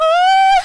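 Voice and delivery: put-on high, loud, girlish screaming.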